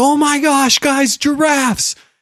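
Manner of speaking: play-acted very high, slow, drawn-out wonder and excitement. Retelling trying to get the kids excited about giraffes: imitating own animated excitement. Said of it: "be animated and get these kids excited".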